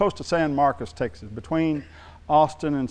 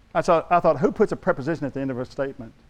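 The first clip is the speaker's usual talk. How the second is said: ordinary talk, nothing marked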